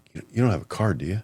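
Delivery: acted, bashfully sheepish, tentative tone. A speaker retells what people eventually ask him: imitating a sheepish ask. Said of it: "kind of sheepishly".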